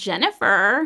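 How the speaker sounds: eerie, inhuman, creepy machine voice. Retelling a computer voice saying Jennifer: creepy computer voice on Jennifer. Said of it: "it said it in this like really creepy way. It was like, Jennifer, like that".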